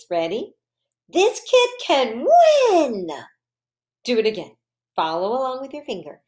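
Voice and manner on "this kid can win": very high, drawn-out, sing-song excited voice. Reading a practice sentence aloud for listeners to follow along, excited voice. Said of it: "And my excited voice".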